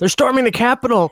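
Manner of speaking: high, excited, urgent words blurted out. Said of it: "And I'm like".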